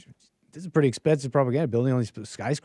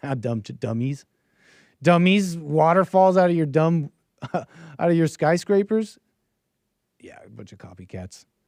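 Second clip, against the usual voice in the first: fake, scornful jeering, super sarcastic and mocking; 6 dB quieter than usual. Ranting jokingly before admitting it was all sarcasm: put-on sarcastic taunting. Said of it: "I'm just being super sarcastic".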